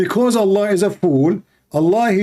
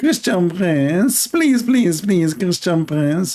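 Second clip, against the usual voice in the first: begging, repeated pleading voice. Retelling a caller who keeps begging for an answer: imitating a caller's pleading voice. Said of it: "they speak like that".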